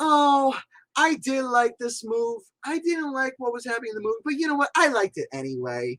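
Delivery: high, mock-sassy gushing voice like a fake fan. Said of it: "sassy McSassy saying".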